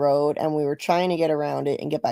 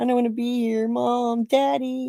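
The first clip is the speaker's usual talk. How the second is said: put-on pathetic, high, whiny little-baby crying voice; 8 semitones higher than usual. Retelling his mocking impression of people trapped there, mock childlike, pathetic voice. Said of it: "childlike and pathetic".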